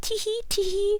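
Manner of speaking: very high, giggly, whispered tee-hee.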